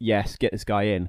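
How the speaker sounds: ordinary talk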